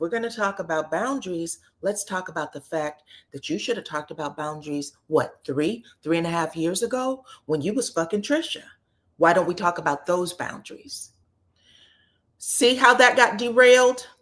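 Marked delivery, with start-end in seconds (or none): 0.0-11.1 soft-spoken, quietly cutting, words rushed out. Retelling the argument, quoting Marquez in Marquez's soft voice. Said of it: "in a soft voice".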